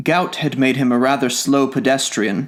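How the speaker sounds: plain reading voice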